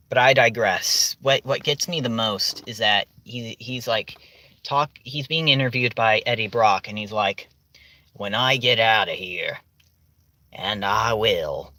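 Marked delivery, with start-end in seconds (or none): 8.1-11.6 exaggerated Southern drawl, low and slow. Retelling a movie villain's line: imitating exaggerated southern accent. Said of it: "he has the exaggerated Southern accent".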